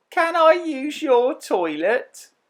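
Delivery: very high, small, whiny, moany voice. Reading a story aloud, Wolfman asks a question: little moany voice. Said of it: "in a little moany voice".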